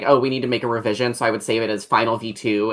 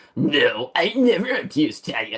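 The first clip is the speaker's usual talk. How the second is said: put-on mocking voice, slow with swooping pitch; 4 semitones higher than usual. Mocking another speaker who drops their voice to sound intimidating: mocking chud voice. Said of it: "I just hear my fucking chud voice".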